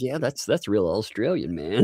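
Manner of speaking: ordinary talk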